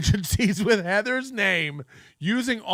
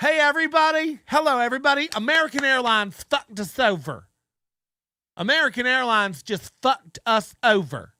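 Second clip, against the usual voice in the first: put-on southern accent, announcer style; 3 semitones higher than usual. Acting out your favorite part, when he made an announcement to everybody, in a southern voice. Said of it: "announced in that southern voice".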